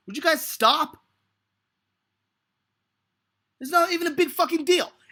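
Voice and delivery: really mad. Complaining that others are blowing it out of proportion: really mad. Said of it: "I'm really mad right now".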